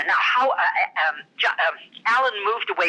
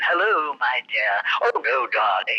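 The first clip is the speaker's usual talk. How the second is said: put-on grand, stagey, old-school classical stage actress delivery; 6 semitones lower than usual. Explaining a character's voice: very Shakespearean theatrical voice. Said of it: "The voice was very Shakespearean".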